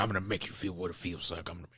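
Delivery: put-on angry low voice. Retelling a movie scene where the hero threatens a man: imitating Rambo's angry low voice. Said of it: "he's doing his angry low voice".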